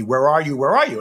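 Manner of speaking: plain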